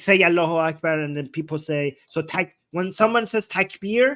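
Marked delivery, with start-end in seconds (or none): none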